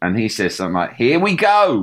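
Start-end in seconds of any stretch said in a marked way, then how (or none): 1.0-1.8 slightly annoying, grating tone, raised and high pitch. Quoting a line from a film trailer: slightly annoying James Corden voice. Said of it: "in his sort of slightly annoying voice".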